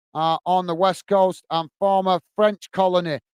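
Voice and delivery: normal talking voice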